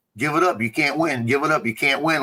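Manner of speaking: usual speaking voice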